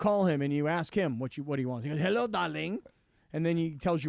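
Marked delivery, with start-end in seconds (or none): 2.0-2.8 put-on French accent. Imitating a French friend answering the phone: put-on French accent. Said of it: "What kind of accent is that?".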